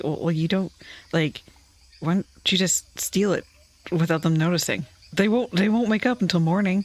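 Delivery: speaking in a whisper. Voicing a character who crouches towards the players: whispering. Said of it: "crouches towards you guys and whispers".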